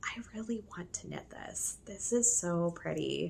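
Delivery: wistful, soft, hushed inner whisper to oneself.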